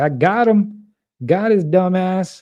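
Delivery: casual, relaxed speaking voice. Commenting on a wedding photo, voicing the bride: imitating the bride. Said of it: "She's like".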